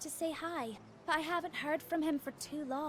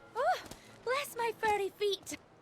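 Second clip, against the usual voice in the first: put-on Scottish accent, pitched up; 7 semitones higher, 5 dB louder than usual. A villager greets someone, speaking in a scottish accent. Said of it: "Why is she Scottish?".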